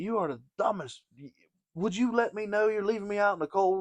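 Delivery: mock, very high-pitched, furious angry yelling. Telling a story, repeating what the speaker yelled at him: retelling a yell. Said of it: "as I'm yelling at him".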